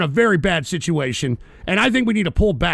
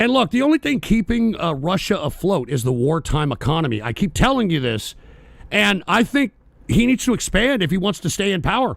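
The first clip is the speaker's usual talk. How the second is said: ordinary talk, nothing marked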